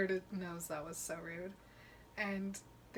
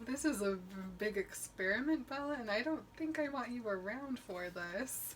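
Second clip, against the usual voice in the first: ordinary talk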